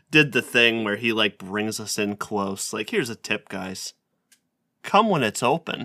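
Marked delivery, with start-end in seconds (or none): 2.9-5.8 play-acted, heavily patronising, condescending tone. Retelling how a man lectured the group about opening hours, mock-condescending. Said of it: "in an even more condescending way".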